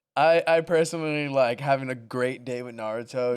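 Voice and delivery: ordinary talk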